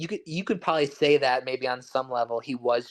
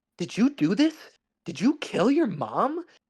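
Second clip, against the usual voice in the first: mock-anguished, pained, hurting delivery, swooping high; 9 semitones higher than usual. Discussing a movie's flashback, the speaker quotes the dad, imitating a pained delivery. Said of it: "pained line deliveries from his dad".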